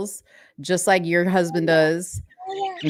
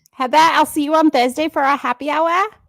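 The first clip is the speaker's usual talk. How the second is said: very high British-accented dog voice; 10 semitones higher, 4 dB louder than usual. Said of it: "My dog has a voice".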